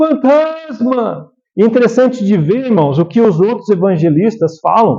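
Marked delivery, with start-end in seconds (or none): 0.0-1.3 high, slow, terrified shouting cry. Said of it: "Começaram a gritar".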